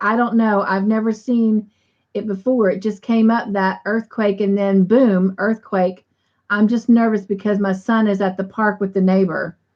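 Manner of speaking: usual speaking voice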